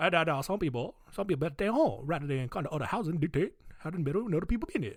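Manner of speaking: fast, put-on Cajun accent.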